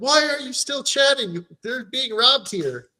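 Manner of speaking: hard, high-pitched mock shouting. Retelling an episode scene where characters yell at the guys: imitating someone yelling. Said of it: "they're yelling at them".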